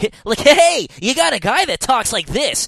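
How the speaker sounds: very high-pitched voice in typical English anime dub style. Mocking the typical English voice acting in an anime game: imitating anime dub voice acting. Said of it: "typical decent voice acting, like".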